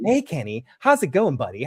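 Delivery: mock nice, calm, easygoing sing-song voice. Retelling how a character greets someone: imitating a nice, calm greeting. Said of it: "such a nice, calm way".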